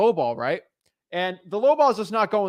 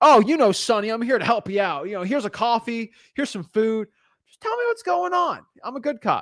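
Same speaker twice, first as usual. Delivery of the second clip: soothing, friendly, coaxing good-cop voice; 3 semitones higher than usual. Acting out a scene from old detective shows: imitating a good cop. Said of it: "You know how the old detective shows are".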